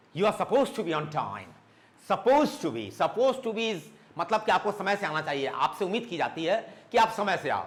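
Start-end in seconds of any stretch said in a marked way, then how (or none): none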